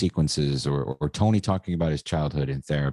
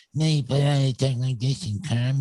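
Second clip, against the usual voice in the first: put-on near-crying voice, higher pitched; 10 semitones higher than usual. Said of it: "always sounded like he was crying".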